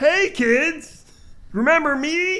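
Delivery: squeaky, very high, slow, drawn-out voice. Doing a Pee Wee Herman impression for the other speaker: Pee Wee Herman voice. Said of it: "That's my Pee Wee Herman".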